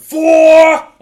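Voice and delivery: loud, high-pitched scream.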